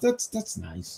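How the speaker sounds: slow, soft, annoyed and grudging "that's nice".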